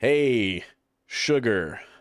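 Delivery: character voice, hard R in "Sugar". Approaching a character at the table, channeling an inner Billy. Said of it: "I'm gonna channel my inner Billy".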